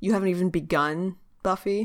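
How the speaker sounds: ordinary delivery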